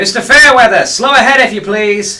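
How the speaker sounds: very high, very loud, shrill goblin woman voice. Narrating a ship scene, a goblin crew member calls out, female goblin voice. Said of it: "a very clearly female goblin voice call out".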